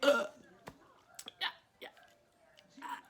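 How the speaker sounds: choked, strained speech through a stifled cough. Retelling a phone call while fighting a throat tickle: imitating talking while stifling a cough. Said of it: "trying to talk without dying".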